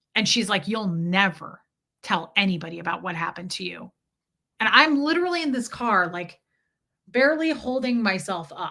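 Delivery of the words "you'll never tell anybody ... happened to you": put-on menacing, threatening voice, lower pitch. Retelling what a woman said while driving: imitating a threatening voice. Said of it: "She's just kind of threatening me".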